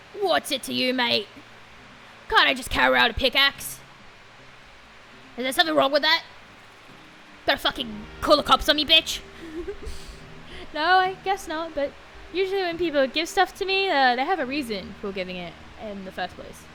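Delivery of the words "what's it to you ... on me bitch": gruff heavy-smoker voice. Character answering someone who asks why they carry a pickaxe, gruff heavy-smoker voice. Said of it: "Like they smoke a million cigarettes a day".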